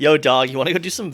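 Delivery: loud, high-pitched slangy bro-speak. A speaker imagines how village people would talk, mock slangy bro talk. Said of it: "Do you think like that's how they talk?".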